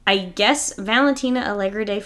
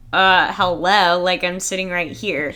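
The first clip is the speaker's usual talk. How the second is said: plain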